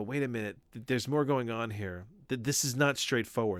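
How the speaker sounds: usual speaking voice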